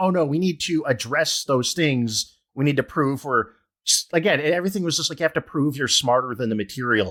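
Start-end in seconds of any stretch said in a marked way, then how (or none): none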